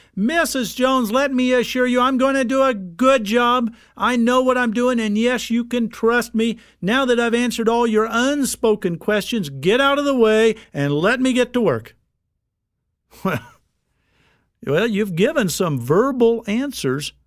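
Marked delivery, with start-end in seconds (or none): 0.2-12.0 booming, loud, proclaiming voice. Showing how a worker might proclaim to a customer at the front door, in a loud proclaiming voice. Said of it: "in a loud voice proclaim".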